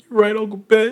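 very high, weepy crying voice. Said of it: "And then he, like, cried".

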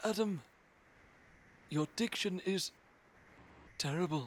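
clumsy narrator voice, a touch high and slow. During a round of voice impressions, a bad David Attenborough impression. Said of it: "that's the worst David Attenborough impression in the planet".

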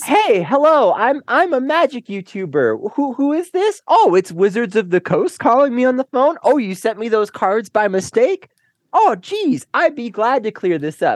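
put-on friendly phone voice, high and slow. Acting out a YouTuber answering a phone call: imitating a friendly phone call. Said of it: "a friendly phone call".

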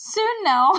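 very high, forced cheerful voice with a quiver. Retelling a mother's answer to her children: imitating forced cheer with quivering voice. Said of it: "She's trying to sound cheerful, but her voice quivers".

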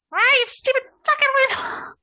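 very high, shrill, enraged shriek of rage. Voicing a character trapped in an avalanche: shrieking in rage. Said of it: "Distant shrieks".

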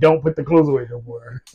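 mock angry, fed-up, mad tone. Retelling what the partner said about the laundry: imitating partner saying it angrily. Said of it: "you've gotten so mad at me that you said".

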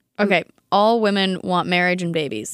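plain

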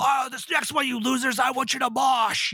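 gravelly, angry rock-singer voice.

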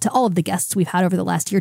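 ordinary delivery

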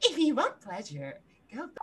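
put-on cartoon anime girl character voice. Showing the others an anime voice, like the anime girl who kills you: anime girl voice. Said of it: "anime-like, right?".

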